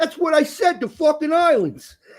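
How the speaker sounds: put-on New York accent, very high. Retelling how kids in a new york school asked the teacher: imitating new york accent. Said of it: "we had a lot of accents there".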